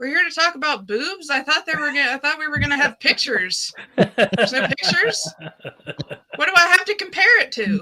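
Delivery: high, loud, mock outraged disbelief.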